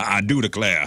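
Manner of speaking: put-on rooster voice with a Southern accent. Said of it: "Foghorn Leghorn".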